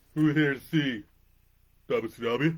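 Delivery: loud, slow, big projecting crowd-working voice. Quoting a favorite line of Scott Hall: Scott Hall impersonation. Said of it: "My favorite Scott Hall line".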